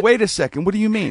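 very high, loud, alarmed panicked blurt. Retelling being told to come get the body, the speaker reenacts panicking. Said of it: "I'm like panicking".

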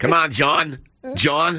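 put-on clumsy, unconvincing Boston accent, slow. The speaker redoes the bit pretending to be Ted calling John: Ted impression, bad Boston accent. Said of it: "Bad Boston accent".

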